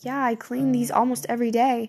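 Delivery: ordinary delivery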